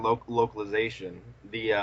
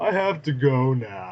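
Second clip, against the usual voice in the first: very slow, drawn-out, clumsy, stilted put-on voice; 3 semitones higher, 4 dB louder than usual. Quoting a favorite line from the dude with the glasses, admitting they do his voice badly. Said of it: "I don't do his voice very well".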